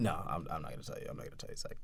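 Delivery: teasing whisper, quick and soft.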